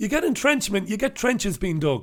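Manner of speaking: put-on high, bouncy children's TV presenter voice. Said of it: "brushing up on my children's TV presentation skills".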